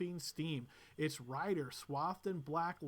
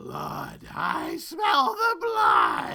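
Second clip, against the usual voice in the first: booming, very loud, very slow drawn-out giant shout; 8 semitones higher, 14 dB louder than usual. A game master voices a giant calling out from the party's west; loud, almost shouting giant. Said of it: "loud, almost shouting voice".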